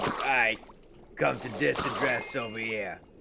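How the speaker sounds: put-on mobster voice. Retelling a phone call, the speaker does the caller, knockoff Don Corleone voice. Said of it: "And he go and he goes".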